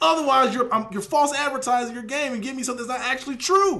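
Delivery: loud yell. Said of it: "Why am I yelling?".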